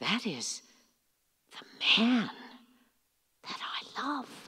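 slow, soft, shocked whisper.

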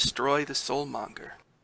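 soft, hushed whispered voice. Voicing an unseen voice heard in the scene: whispering voice. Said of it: "You actually hear a voice whisper".

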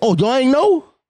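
taunting, ridiculing, teasing delivery. Retelling what a man says every time: mocking imitation of him. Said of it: "he be like".

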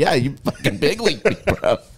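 talking while laughing through the words. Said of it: "He's like".

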